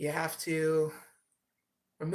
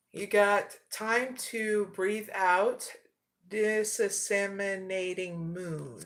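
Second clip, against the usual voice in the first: very slow, careful delivery. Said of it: "Had to say it slow".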